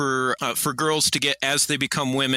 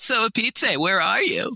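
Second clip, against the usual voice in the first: put-on mocking echo voice, much higher pitch; 8 semitones higher than usual. Retelling the myth where Echo answers Coyote and Hawk, Echo's mocking call back. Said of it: "She just calls back mockingly".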